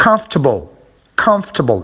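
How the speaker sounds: stress on the syllable COM in comfortable. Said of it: "at the beginning again".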